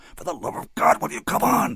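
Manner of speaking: very high, urgent hissing. Reading a novel: a man hisses at a terrified boy. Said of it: "he hissed".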